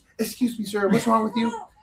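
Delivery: showy, theatrical, flamboyant, high-pitched voice. Retelling a flight where the cabin manager came over, flamboyant cabin manager voice. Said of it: "he's very flamboyant too".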